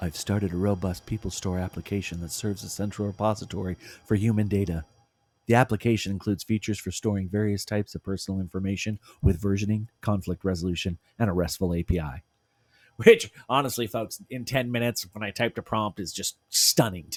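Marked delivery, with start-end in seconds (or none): 0.0-12.2 put-on AI assistant voice. Reading out what the AI tool replied, the presenter puts on an AI voice. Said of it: "let me put on my A I voice".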